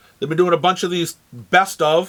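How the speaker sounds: ordinary talk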